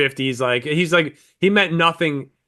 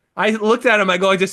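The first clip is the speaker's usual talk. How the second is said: usual speaking voice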